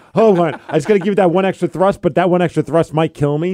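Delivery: ordinary delivery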